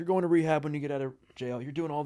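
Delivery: angry, high-pitched scolding dad rant. Retelling a jail visit where dad pushed rehab: imitating a dad yelling. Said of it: "he started yelling at me".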